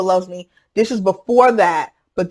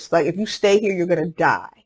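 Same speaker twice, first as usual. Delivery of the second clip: barely-there, very soft, hushed voice; 3 dB quieter than usual. Recalling what god said to you back then, in the softest voice. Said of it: "It was like the softest voice".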